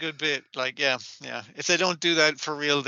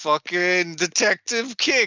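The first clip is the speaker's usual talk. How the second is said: put-on drunk woman slurring, higher and louder; 5 semitones higher, 5 dB louder than usual. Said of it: "she's so fucking drunk".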